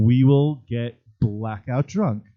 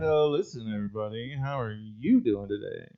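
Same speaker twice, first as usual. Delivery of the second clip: piratey, showman-style pirate voice; 8 dB quieter than usual. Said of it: "I'm like [name]".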